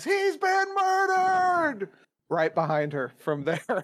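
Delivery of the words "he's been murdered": very high, shrill, full-volume scream. Playing the game, the character yells from right behind her, screaming at top of lungs. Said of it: "I scream at the top of my lungs".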